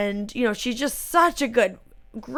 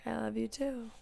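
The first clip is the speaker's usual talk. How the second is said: put-on hushed, soft, deadpan, flat monotone; 18 dB quieter than usual. Recapping Jade and Sean's exchange, speaker imitates Jade's reply in a flat monotone. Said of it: "So monotone".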